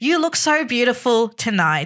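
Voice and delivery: loud voice carrying across the room. Speaker quotes what he said at the restaurant table, imitating his loud voice. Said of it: "he says that in a loud voice".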